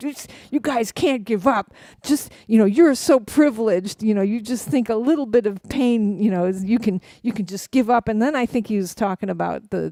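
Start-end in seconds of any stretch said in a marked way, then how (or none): 0.0-8.1 ranting and yelling. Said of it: "starts yelling about".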